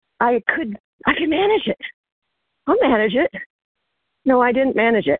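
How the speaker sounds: breathing hard. Telling a story while walking up a hill; breathing hard. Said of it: "I'm breathing hard going up a hill".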